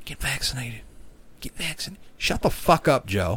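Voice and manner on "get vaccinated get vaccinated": very quiet, hushed, breathy, barely voiced whisper. Retelling the president's TikTok videos: imitating Joe Biden whispering.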